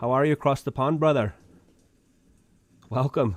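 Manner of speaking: friendly put-on Irish accent, a brogue. Host greets a viewer writing in from ireland, in an irish accent. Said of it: "How's my Irish accent?".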